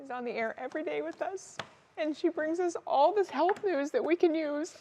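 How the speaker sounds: tearful voice, crying while talking. Introducing a coworker on air before her third brain surgery, crying while talking. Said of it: "I don't even know why I'm crying".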